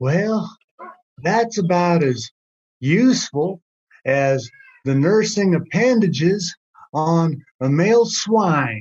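put-on voice of a very old grandfather. Retelling what a friend's granddad used to say, in Archie Cunningham's old man voice. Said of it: "he had this old man voice, and he'd say".

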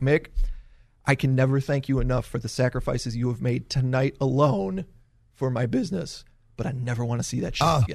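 calm, soft, not loud. Retelling what Vince McMahon said backstage: calmly imitating Vince McMahon. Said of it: "very calmly".

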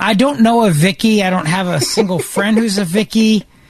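normal talking voice

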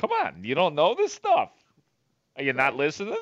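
condescending sing-song, swooping high on odd stresses. Mocking how Don Cooper always talks, imitate Don Cooper's tone. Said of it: "His tone is always very".

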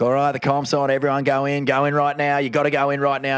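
hurried, urgent, half-shouted mild yelling. Retelling how the water patrol on skis sent everyone in, retelling a scream. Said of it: "just screaming at people".

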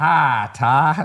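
put-on country-accented casual speech. Telling a story about a basketball court, imitating how he used to talk. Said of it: "he used to talk like this".

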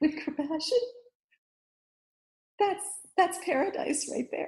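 voice overcome with feeling. Speaking about living with compassion, overwhelmed with emotion. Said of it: "I'm getting a little overwhelmed".

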